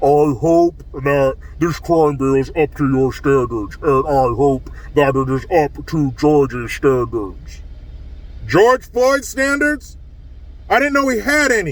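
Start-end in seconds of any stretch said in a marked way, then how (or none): 0.0-7.6 very deep, low, sinister put-on demonic voice. Imitating a woman's statement: put-on demonic voice. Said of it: "let me do it in her voice, in her demonic voice".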